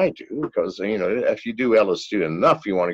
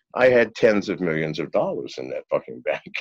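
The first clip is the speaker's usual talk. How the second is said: usual speaking voice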